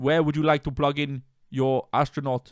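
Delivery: attempted, fake, put-on Austrian accent. Two speakers wonder why neither can do the accent; attempted Austrian accent. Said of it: "Why can't either of us do an Austrian accent?".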